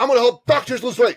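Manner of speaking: eager voice, pitched high and loud.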